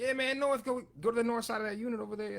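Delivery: put-on Cajun accent with very high pitch. Retelling how these guys give directions to the north, do buddy Louie's Cajun accent. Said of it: "That was your Cajun accent?".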